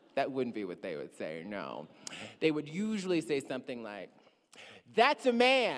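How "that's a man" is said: very high, shrill, loud, over-the-top mocking tone. Imitating what people would usually say about someone: exaggerated mocking imitation. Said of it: "I say it like that, sort of making fun of it".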